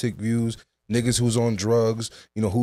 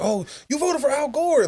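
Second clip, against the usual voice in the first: acted, very high-pitched, all-excited child voice. Retelling a childhood moment in the voting booth with mom: imitating own excited childhood self. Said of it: "being all excited and shit".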